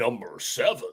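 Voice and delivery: nice deep voice, put on for show. Announcing who goes seventh, the speaker does a nice deep voice. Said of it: "give you the like nice deep voice".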